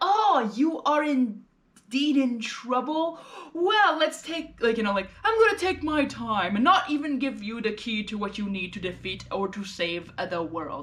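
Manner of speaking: slow, drawn-out, exaggerated pish-posh accent.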